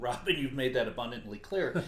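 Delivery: plain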